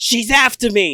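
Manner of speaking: very high, loud, accusing shout. Voicing a character who jumps up and points: yelling in character. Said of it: "and he yells".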